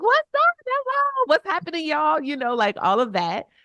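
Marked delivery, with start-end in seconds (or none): 0.0-2.2 super hyped, loud, very high voice. Describing her classroom at seven in the morning, the speaker retells her loud hype greeting. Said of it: "I am loud. I am fun. I am super hype".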